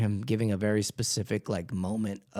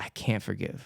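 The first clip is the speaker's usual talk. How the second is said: put-on tearful, crying voice; 4 dB quieter than usual. Retelling what a guy said when offered prayer: imitating someone crying. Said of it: "And he was crying".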